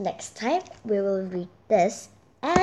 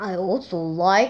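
manly voice, much lower; 5 semitones lower than usual. Playing a man who loves god after being asked for a man voice. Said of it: "be a man voice".

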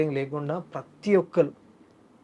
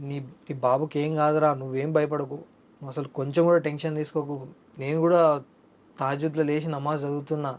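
normal talking voice

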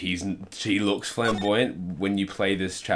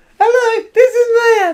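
put-on high voice, much louder; 16 dB louder than usual. Taking the role of Maya, as the others expect: high-pitched Maya voice. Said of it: "Because of high-pitched voice".

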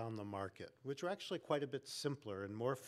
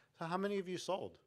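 nicest, sweet, innocent-sounding naive voice, pitched up; 6 semitones higher than usual. Recounting asking salespeople at conferences how many they sold, putting on my nicest voice. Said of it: "naively and in my nicest voice".

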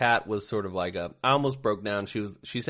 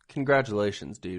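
normal talking voice

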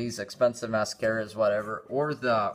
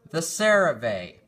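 sudden, louder, raised, pitched-up callout; 5 semitones higher, 3 dB louder than usual. Going over store deals and coupons, raised voice. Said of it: "I just raised my voice there".

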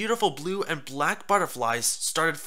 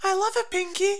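very high, reassuring exclamation. At a picnic her friend prepared, she answers her friend, assuring. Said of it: "Fluttershy assured her".

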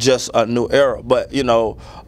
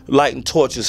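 ordinary talk, nothing marked

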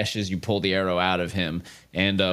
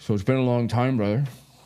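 character voice spoken with mouth full; 3 semitones higher than usual. Narrating to the player, your brother Orin speaks mid-bite, talking with mouth full. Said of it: "he speaks to you with his mouth full".

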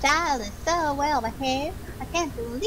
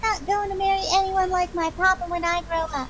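put-on higher, childlike, small little girl's voice; 5 semitones higher than usual. Playing a little girl in a scene, in a little girl voice. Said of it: "You do the little girl voice".

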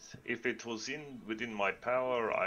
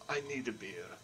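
hushed, muttered under the breath; 4 dB quieter than usual. Player's character, after the guards nod, speaking under breath. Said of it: "I'll say under my breath".

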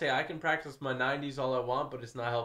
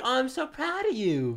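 very high voice, slow, words drawn out; 13 semitones higher, 3 dB louder than usual. Imitating how Samara talks after beating the other player: imitating Samara. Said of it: "The way she talks".

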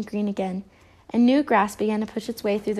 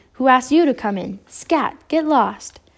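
icy, frosty, chilling cold tone; 3 semitones higher, 5 dB louder than usual. Confronting the bears floating into the park, he speaks icily. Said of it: "Coldheart said icily".

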